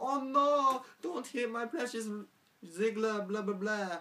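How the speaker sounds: very high-pitched, pleading vampire-style voice. Recapping a wrestling segment, voicing Lana's plea for Ziggler, vampire voice as Lana. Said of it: "why did I speak like a vampire just then?".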